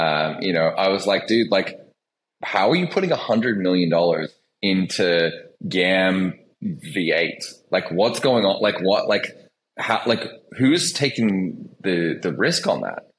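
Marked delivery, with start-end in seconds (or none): none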